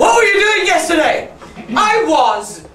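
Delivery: high, loud, angry voice. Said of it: "you've got to ask each other angrily".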